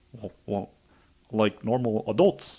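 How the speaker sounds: put-on halting actor voice. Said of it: "I'm talking like fucking Adam Driver".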